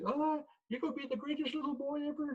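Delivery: put-on very high, soft, cooing baby-talk voice. Showing the tone called Storge, in a voice for speaking to children. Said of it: "you use a certain tone. It's the tone called Storge... that voice that speaks to children".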